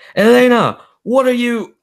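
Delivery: very high, loud, frantic shout. Narrating a scene, voicing a man who calls out to Elena: shouting. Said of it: "but he shouts".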